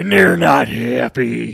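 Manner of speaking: bad, rough, raspy wrestler rant. Asked to do a Macho Man, attempt it in a bad Macho Man rant. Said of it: "That's such a bad Macho Man rant".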